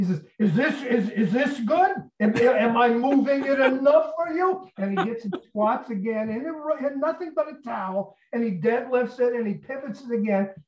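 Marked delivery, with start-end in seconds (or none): 0.4-4.7 mock furious, screamed angry yelling. Retelling how Tony reacted, imitating someone screaming and swearing. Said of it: "Tony just starts screaming and swearing at him".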